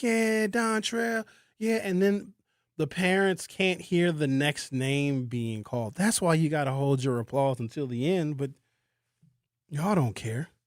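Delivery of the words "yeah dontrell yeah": rowdy crowd yelling, screaming and hollering, high cheer. Describing families at a graduation ceremony: imitating a yelling graduation crowd. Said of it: "you're yelling and screaming like".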